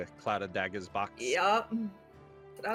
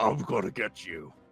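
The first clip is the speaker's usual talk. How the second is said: growling, snarling voice; 10 semitones lower, 4 dB louder than usual. Voicing a creature baring its teeth at a player: growling threat. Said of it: "And he growls, baring his teeth".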